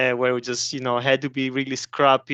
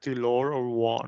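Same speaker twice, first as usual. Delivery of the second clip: put-on heroic robot leader voice, quieter; 5 dB quieter than usual. Asked by another speaker to do it: Optimus Prime voice. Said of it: "do your Optimus voice".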